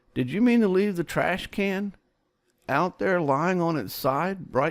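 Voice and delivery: acted, high, doubtful, questioning tone. Acting out a wife coming upstairs during dictation: mock this-doesn't-seem-right voice. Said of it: "in that this doesn't seem right voice".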